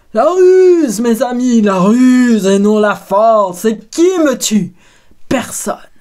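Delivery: booming, very loud giant's bellow. Reading the story, the narrator gives Polyphemus's cry from the cave in his biggest voice. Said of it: "De sa plus grosse voix".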